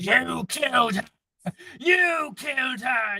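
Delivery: loud, high-pitched shrieking creature voice. Voicing a spider creature attacking a player: screaming creature. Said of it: "You can hear it screaming".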